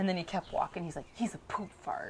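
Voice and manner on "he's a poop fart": whispered, hushed grumbling mutter under the breath. Retelling how a tired child muttered about another child: imitating muttering under breath. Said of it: "under his breath".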